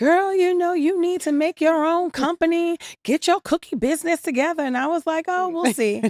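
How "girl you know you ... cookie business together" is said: very high-pitched put-on Jamaican accent. Retelling what her girlfriend's aunt said, imitating the aunt's jamaican accent. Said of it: "in her Jamaican accent".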